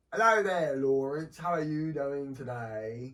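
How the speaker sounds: loud, slow, put-on British lady's accent. Retelling a lady who came up and greeted the speaker, imitating a British lady. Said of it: "some lady, cute lady, came up to me and was like".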